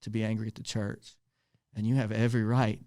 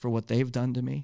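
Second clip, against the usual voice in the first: normal talking voice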